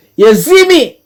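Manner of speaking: high, loud, excited outburst.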